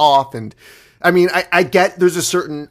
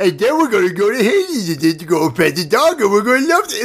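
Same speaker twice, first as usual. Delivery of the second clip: high, pitched-up put-on cartoon-character voice; 5 semitones higher than usual. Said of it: "you sound like Homestar Runner".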